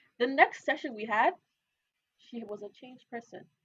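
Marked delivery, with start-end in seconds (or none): none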